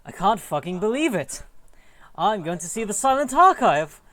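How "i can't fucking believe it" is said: put-on sage old teacher voice. Voicing the character Lantry, the speaker swears: Obi-Wan voice. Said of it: "swear in like an Obi-Wan voice".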